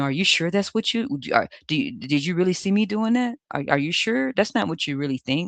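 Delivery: mock stumbling, manipulative, doubt-sowing voice. Showing how the person tried to gaslight you: imitating a gaslighter. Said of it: "they probably tried to gaslight".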